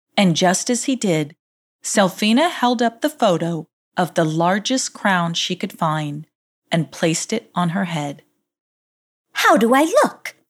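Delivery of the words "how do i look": shrill, insistent, high and loud demanding tone. Selfina asks Dirty Gus for his opinion, demanding. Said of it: "she demanded".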